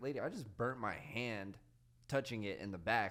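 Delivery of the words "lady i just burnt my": plain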